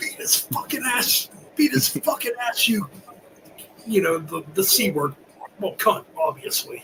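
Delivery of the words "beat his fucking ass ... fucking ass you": mock high-pitched heckling holler. Retelling a fight at a hockey game: retelling own yell. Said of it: "I yelled".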